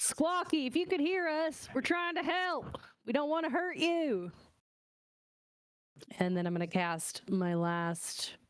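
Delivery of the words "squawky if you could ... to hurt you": very high, pitched-way-up yell. Playing a character in a game, calling after someone: yelling after him. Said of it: "I'm gonna yell after him".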